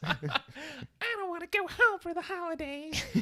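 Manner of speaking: very high, loud, silly cartoon voice. Showing how to say the same thought in another voice: [name]'s sponge voice. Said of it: "Why does the voice keep changing?".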